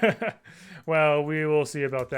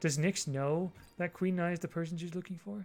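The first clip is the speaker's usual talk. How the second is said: secretive, hushed half-whisper; 10 dB quieter than usual. Asking a co-host a secret question about a match: half-whisper. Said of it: "I guess I need to whisper here".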